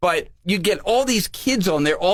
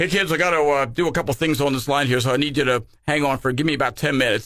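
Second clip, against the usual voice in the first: grown-up, adult-sounding voice; 3 semitones lower than usual. Retelling an adult who came on the phone line: imitating a grown-up's voice. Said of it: "we hear this grown-up voice come on".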